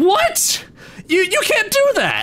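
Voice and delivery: angry, frustrated outburst. A young hermit crab hero protests a hustler's plan: angry, frustrated outburst.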